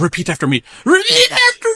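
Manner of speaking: very high, loud, wild, crazed, shrill, swooping priest voice. Quoting Father Renaud forcing a baptism at gunpoint: imitating Father Renaud sounding crazy. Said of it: "you sound crazy".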